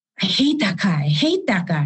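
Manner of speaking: acted-out mad, huffy, angry grumbling. Recounting an upset kid's complaint about a teacher: imitating an angry grumble. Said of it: "in a huff and all mad and grumbling".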